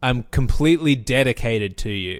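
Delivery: creepy, intense, unsettlingly devoted tone. Retelling a creepy movie line: creepy Angus Macfadyen imitation. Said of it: "the creepy thing that Angus McFadden says".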